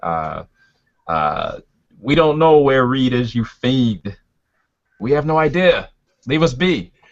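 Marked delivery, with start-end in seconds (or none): 2.0-6.8 acted, high-pitched yelled delivery. In the story, facing the rasping figure, the character is yelling back. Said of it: "yell back".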